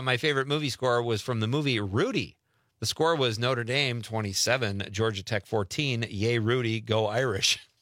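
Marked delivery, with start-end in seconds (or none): none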